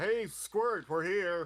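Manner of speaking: loud hollering, high-pitched and stretched out. Calling up to a kid clinging to a box: yelling out. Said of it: "I'm just gonna yell out".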